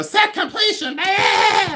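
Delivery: very high, shrill, annoying exclaiming voice. Mimicking how other resellers talk about set completion: imitating annoying resellers. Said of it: "but they go".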